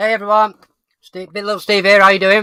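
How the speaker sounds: talking while chewing. A host welcomes everyone to the stream, talking while eating. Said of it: "Sorry, I'm just eating".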